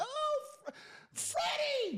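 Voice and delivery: mock stage scream, whispered. Picturing a partner with someone else: imitating a woman screaming a name. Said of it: "picture her screaming like".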